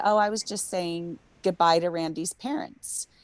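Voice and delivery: normal talking voice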